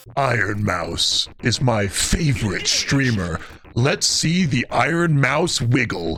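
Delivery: eerie, creepy, very deep voice. Speaker tries a voice-acting bit for a recording: creepy voice. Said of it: "it just sounded creepy".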